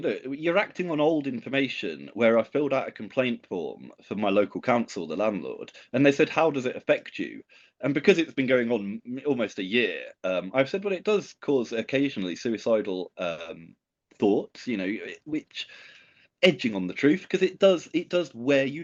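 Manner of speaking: ordinary talk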